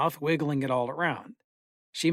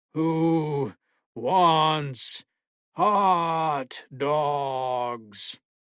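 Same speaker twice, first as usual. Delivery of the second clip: very slow monster voice, "hot" dragged out. A dad comes out onto the patio toward the kids, in a Frankenstein voice. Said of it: "He asked in a Frankenstein voice".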